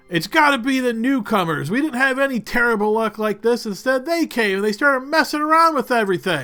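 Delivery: angry shout. Voicing a villager blaming newcomers in the fog: raised angry voice. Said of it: "you hear some raised voices as one says".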